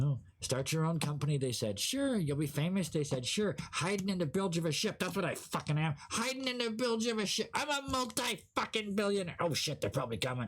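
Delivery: tiny, small, high little voice. Hiding in a ship's bilge, a character speaks up from the depths in a little voice. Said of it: "this little this little voice".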